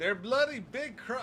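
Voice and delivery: very shrill, loud, high, fake Australian accent. Imagining Debbie's remark out loud: terrible yelled Australian accent. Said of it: "I can just hear that in Australian. ... that's a terrible Australian accent".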